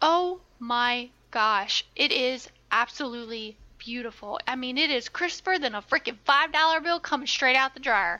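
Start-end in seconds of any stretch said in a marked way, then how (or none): 4.8-8.2 strong southern accent with heavy drawl throughout. Praising a restored film preview: very southern accent. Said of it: "Why'd you go into a very southern accent".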